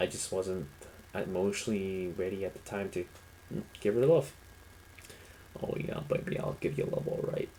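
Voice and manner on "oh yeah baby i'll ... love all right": unsettling, creepy, seductive come-on voice. Joking about a past relationship, showing off a creepy voice. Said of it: "That's my creepy voice".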